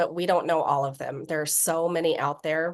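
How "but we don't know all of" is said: ordinary delivery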